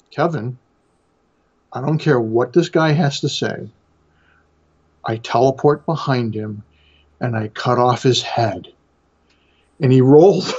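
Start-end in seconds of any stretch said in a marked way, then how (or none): 0.1-8.6 mock dead-serious, earnest tone. Retelling how a d&d player turned to him, mock super serious. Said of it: "the guy turns to me and like super serious and says".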